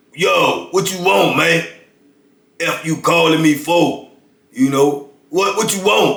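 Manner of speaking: big, straggly, rough, gruff voice, high-pitched. Retelling how a dude answered from segregation: imitating Cake's big rough voice. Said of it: "he got this big, straggly, rough voice".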